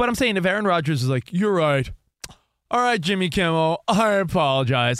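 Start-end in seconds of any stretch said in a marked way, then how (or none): 1.3-5.0 exaggerated, plainly insincere, over-the-top sarcasm. Acting out a hypothetical apology to Jimmy Kimmel: imitating over-the-top sarcasm. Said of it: "he's over the top sarcastic".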